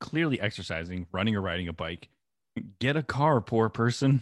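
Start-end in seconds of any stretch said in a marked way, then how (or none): 2.8-4.2 put-on slow, high, loud, drawn-out yelling shout. Retelling yelling out a car window at people running: imitating own past yelling. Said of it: "I've one hundred percent yelled out the window".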